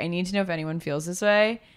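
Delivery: ordinary delivery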